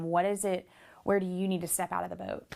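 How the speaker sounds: plain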